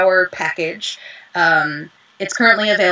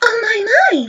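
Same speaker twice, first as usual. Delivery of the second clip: very high pitch, light and cute voice. Showing the light, cute voice of Alicia: Alicia voice, light and cute. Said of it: "she's so light and cute".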